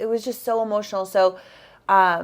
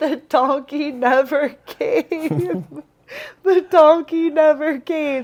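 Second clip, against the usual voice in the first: put-on crying voice, higher and louder; 8 semitones higher, 5 dB louder than usual. Retelling what a hiker said on reaching the pass: imitating someone crying. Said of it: "And she's crying".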